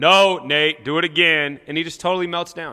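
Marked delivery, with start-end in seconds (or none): 0.0-1.6 very loud, very slow, resounding booming voice. Telling how Nate hears a voice from somewhere, the speaker does it: booming voice. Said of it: "he hears this booming voice coming out of somewhere".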